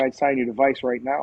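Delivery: ordinary delivery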